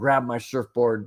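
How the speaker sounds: ordinary talk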